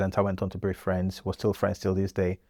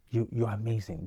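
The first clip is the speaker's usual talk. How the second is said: soft, put-on, very Nigerian accent; 6 dB quieter than usual. Retelling how a guest came up to you and praised you, imitating a very Nigerian manner. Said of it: "in a very Nigerian fashion".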